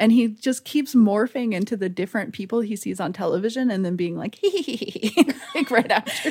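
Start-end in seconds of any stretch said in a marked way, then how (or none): 4.4-5.3 high, unsettling hee-hee giggle. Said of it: "he has this laugh that is so upsetting".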